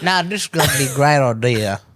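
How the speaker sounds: put-on Southern accent. Voicing someone planning a gender reveal explosion: put-on southern accent. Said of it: "I don't know why I went southern like that".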